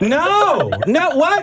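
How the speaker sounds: very high, swooping yell close to the microphone. Reacting in disbelief to another speaker's answer: yelling. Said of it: "I'm yelling into it".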